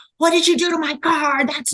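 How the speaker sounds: high, shrill screaming outburst. Retelling how the husband screamed at the valet: imitating husband screaming. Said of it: "my husband starts screaming at the valet".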